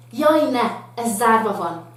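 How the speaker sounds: loud, slightly outraged, indignant tone. Showing how the line should sound, say it slightly indignant. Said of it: "inkább kicsit ilyen, ilyen fölháborodott".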